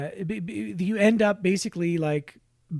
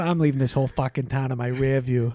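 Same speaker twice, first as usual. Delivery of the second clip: put-on Boston dialect, lower; 5 semitones lower than usual. Quoting a line from the movie The Town: Boston accent. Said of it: "that's the famous Boston dialect".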